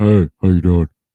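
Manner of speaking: very low, rumbling, booming bass voice. Speaker imitating their daughter's boyfriend saying hello, Justin's very low voice. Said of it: "His voice is so low".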